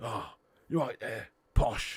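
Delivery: voice dropped low. Imagining Jason Statham playing David Beckham, speak in a low Jason Statham voice. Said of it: "he's got too much of a low voice".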